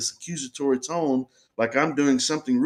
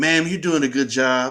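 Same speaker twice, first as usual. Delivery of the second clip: mock very sarcastic male delivery. Retelling what a man who walked up said to her, imitating a very sarcastic man. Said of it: "very sarcastically, he says".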